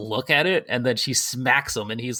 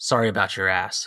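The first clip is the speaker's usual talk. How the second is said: mock low, completely expressionless deadpan; 4 semitones lower than usual. Retelling a game moment, quoting Cloud: imitating Cloud's deadpan. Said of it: "full deadpan just goes".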